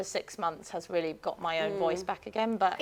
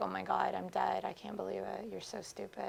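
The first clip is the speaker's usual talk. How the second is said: put-on raspy croak, much quieter; 10 dB quieter than usual. Showing the co-host the Kardashian style, Kardashian rasp. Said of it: "The rasp, the croak".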